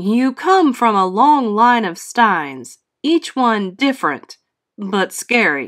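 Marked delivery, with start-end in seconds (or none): none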